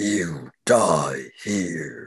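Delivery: put-on menacing orc villain voice. Voicing an armored orc who threatens the party: orc villain voice. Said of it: "and he says".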